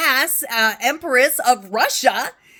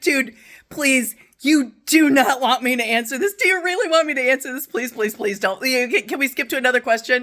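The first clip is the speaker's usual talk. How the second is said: acted near-tearful pleading. Recalling an interviewer asking her about Sacagawea, retelling a near-tearful plea. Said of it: "I'm almost crying".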